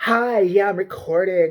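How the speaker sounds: slow, aggrieved, irate woman's voice. Retelling a woman filming at a supermarket, imitating an angry woman's voice. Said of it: "why do they all talk like that".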